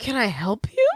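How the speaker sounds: put-on tone of genuine concern. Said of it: "he says it with the most genuine concern".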